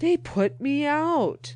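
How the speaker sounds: drawn-out, very high, slow ghostly moan. Narrator reading a story, the ghost answers the narrator in a groaning ghost voice. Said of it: "groaned the ghost".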